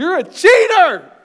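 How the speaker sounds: very high shriek at full volume. Retelling screaming at a player from the bleachers after softball: retelling own scream. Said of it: "Then I screamed".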